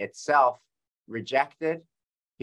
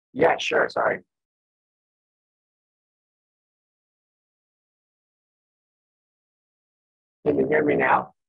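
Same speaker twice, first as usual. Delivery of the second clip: raspy, husky, hoarse, rough voice; 12 semitones lower, 4 dB louder than usual. On a call with mic trouble, checking whether others can hear you, hoarse voice. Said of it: "You sound very hoarse".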